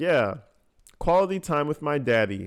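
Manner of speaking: usual speaking voice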